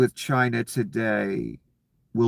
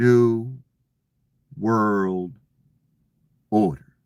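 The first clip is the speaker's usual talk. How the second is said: heavy, very slow, stretched-out, drawn-out delivery. Retelling how he said the phrase at the end: very slow, drawn out. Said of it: "He said it in a very slow, drawn out way".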